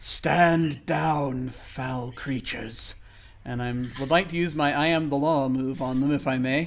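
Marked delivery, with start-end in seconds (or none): 0.0-2.9 echoing, commanding voice, very slow and drawn out. Voicing a character ordering creatures to retreat: commanding echoing voice. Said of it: "my voice echoes a little bit as I say this".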